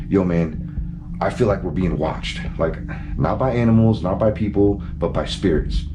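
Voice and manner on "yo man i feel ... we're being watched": usual speaking voice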